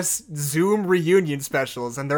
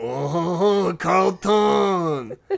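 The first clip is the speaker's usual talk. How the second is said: tearful crying-out voice, a bit higher in pitch. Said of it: "I think it would go a little something like this".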